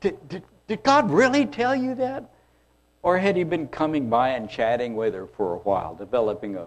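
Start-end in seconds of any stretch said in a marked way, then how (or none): 0.0-2.2 mock winded, breathless, incredulous, very high pitch. Speaker acts out the snake running up to ask her, mock out-of-breath incredulity. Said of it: "Kind of out of breath".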